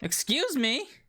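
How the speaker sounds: high shouting. A character discussing expulsion suddenly breaks off, yelling. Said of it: "Sorry for yelling".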